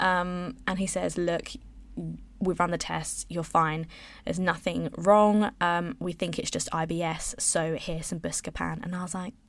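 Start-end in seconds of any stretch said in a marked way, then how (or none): none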